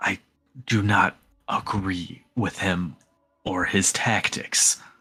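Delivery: hushed whisper. A character looks around and leans in to confide, whispering quietly. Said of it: "leans in and whispers quietly".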